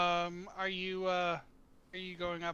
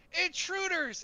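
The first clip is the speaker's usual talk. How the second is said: alarmed scream, higher; 12 semitones higher than usual. Voicing a character who spots intruders on the stairs: screaming in alarm. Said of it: "he's gonna scream".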